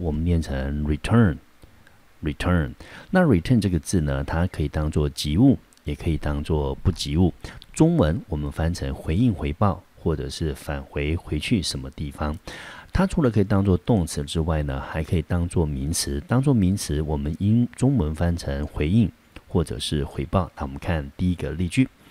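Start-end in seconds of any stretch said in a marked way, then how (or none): 0.8-2.7 "return" stressed on second syllable. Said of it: "这个字重音节在第二个音节".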